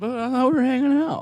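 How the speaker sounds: put-on very high-pitched, slurred drunken voice. Retelling what they said when everyone went to bed, acting out slurred words. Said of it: "Slurring your words".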